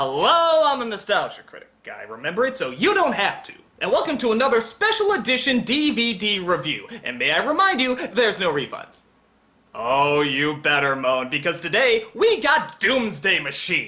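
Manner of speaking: bright, upbeat, chipper, sing-song host voice. Showing a toned-down take of the intro, sarcastically positive: more chipper take. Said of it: "that one was a lot more chipper".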